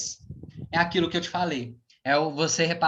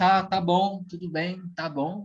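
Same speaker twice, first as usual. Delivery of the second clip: placating, conceding, settling-down, backing-down tone. Retelling a customer calming down: imitating a customer lowering his voice. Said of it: "Ele abaixou a voz".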